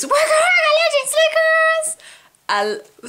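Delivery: mock, shrill, very high, drawn-out thrilled shriek. Speaker recalls her sister opening a notebook surprise; retelling sister's scream. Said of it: "And then she screams".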